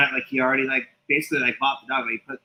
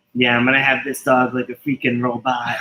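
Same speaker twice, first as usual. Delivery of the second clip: plain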